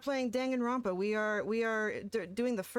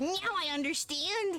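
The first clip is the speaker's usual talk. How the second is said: small, cutesy, tiny high-pitched little voice; 7 semitones higher than usual. Repeating a game character's line: imitating his little voice. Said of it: "His little voice, his little Blorba voice".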